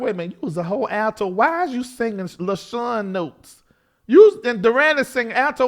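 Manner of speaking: ordinary delivery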